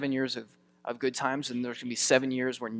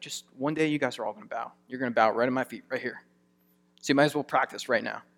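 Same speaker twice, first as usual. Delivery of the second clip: sassy, with a bit of cheeky attitude. Acting out Joseph telling his older brothers they will bow: Joseph with a little attitude. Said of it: "getting this little attitude".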